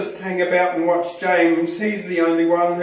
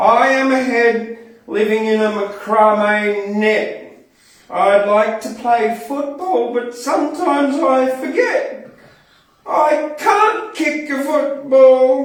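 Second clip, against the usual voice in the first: distinct, high-pitched put-on talking mannequin-head voice; 6 semitones higher, 3 dB louder than usual. Performing a poem as an ex-hairdressing mannequin head, in a different voice. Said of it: "I think I need a different voice for this".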